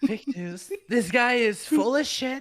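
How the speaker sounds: drawn-out, slow, high, dismissive rally-speech voice. Interrupting a story about an old online feud: Donald Trump impression. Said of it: "that was a solid impression".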